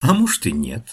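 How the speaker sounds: ordinary delivery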